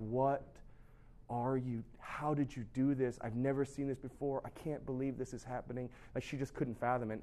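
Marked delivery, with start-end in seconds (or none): 0.0-5.9 tearful, overwhelmed, disbelieving weeping cries. Retelling the social services lady's reaction to the families, imitating someone crying. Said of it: "the social services lady is weeping, she's crying".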